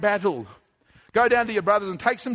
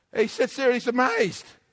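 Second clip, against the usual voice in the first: plain reading voice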